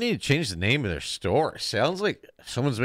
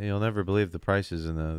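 ordinary talk, nothing marked

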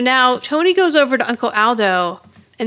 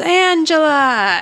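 put-on yell, higher pitch; 5 semitones higher than usual. Retelling how an aunt called out a name before a hug, retelling a yell. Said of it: "She yells".

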